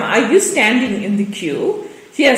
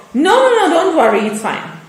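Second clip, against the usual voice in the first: mock harsh tone, pitched up; 7 semitones higher than usual. Retelling a woman's curt refusal in a shop line: imitating a harsh tone. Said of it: "In a very, you know, harsh tone".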